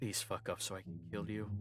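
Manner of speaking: muttering under the breath. Voicing an assistant who follows the party, threatening them: muttering under his breath. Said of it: "you hear him under his breath, like, muttering".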